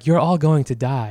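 put-on seductive, sexy, sultry radio announcer voice. Retelling a woman's radio broadcasts to American servicemen, imitating a sexy radio voice. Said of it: "she had like a very like sexy radio voice".

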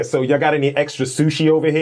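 really aggressive, confrontational, high-pitched delivery. Recounting how they take up space when they go there, retelling an aggressive question. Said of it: "I say it really aggressively".

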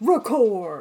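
loud, aggressive, over-enunciated monster-truck announcer bark. Saying record when going live, monster truck announcer voice. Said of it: "like the monster truck guy, record. Sometimes it just comes out really aggressive".

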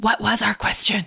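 hushed, quiet whisper. Looking at Maypri and Keela while asking them something, whispering. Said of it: "just sort of whispering".

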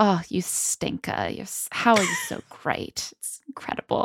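whispered, breathy, gushing put-on Australian accent. Acting out a character's compliments in a movie recap: australian accent. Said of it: "I'm doing Australian accent now".

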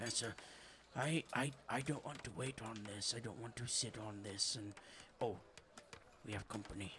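hushed voice. Game master voices a character who spots the player, in a lowered voice. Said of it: "he lowers his voice a little bit more".

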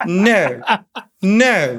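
drawn-out sarcastic, withering no with a laugh.

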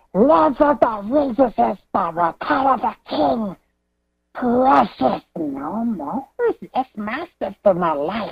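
put-on fantasy creature voice. Leaving a call-in message as Smeagol: Smeagol voice. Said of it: "Smeagol kinda sounded like a, a Smeagol Pablo at the end there".

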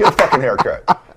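put-on blunt, curt-sounding delivery. Retelling a blunt order from the speaker's wife: imitating wife's blunt order. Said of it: "She said it just like that".

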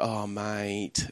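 very soft, quiet, passive-aggressive pitying voice. Retelling what comics said out the front of the town hall: imitating a passive-aggressive tone. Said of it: "that passive-aggressive".

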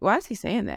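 plain

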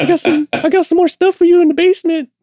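very high, pushed-up cartoon voice. Joining in quoting the Family Guy character: Herbert voice. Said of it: "Yeah, Herbert".

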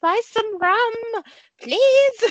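very high, slow, silly put-on old-lady voice. Recalling watching a movie, both making voices together: silly old-lady voice. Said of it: "making the silliest like old lady voices".

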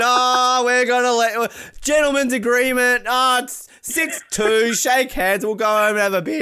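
put-on Canadian accent, curling-club style. Mocking polite curlers, mock Canadian curler voice. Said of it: "None of this Canadian".

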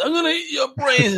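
zombie voice pitched very high. Retelling how a friend rolled up his eyes and acted: imitating a friend doing a zombie. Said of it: "my friend would roll up his eyes and starts".

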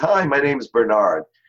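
clear, projected, announcing voice. Retelling a young boy introducing himself to a crowded room, retelling a loud greeting. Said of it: "And in a loud voice".

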